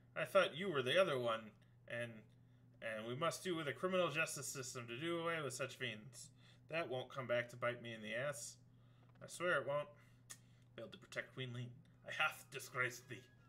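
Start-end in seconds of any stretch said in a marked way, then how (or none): 10.8-13.2 froggy character voice. Reading a character's lines aloud, in a frog voice. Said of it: "let's do the frog voice some more".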